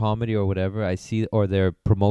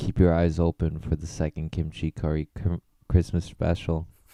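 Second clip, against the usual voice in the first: quiet whispered voice; 3 semitones lower, 3 dB quieter than usual. Announcing an upcoming christmas special to a co-host: whispering. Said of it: "why are you whispering?".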